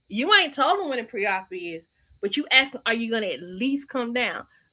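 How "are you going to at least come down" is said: imitated confrontational tone, quieter. Retelling how another speaker asked a question: imitating a confrontational tone. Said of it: "it has a confrontational tone to it".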